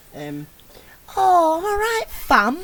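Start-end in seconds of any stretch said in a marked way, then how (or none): 1.2-2.6 high, booming, drawn-out, belted delivery. Showing the other speakers a Jodie Whittaker impression for Doctor Who. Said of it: "what would your Jodie Whittaker impression have been?".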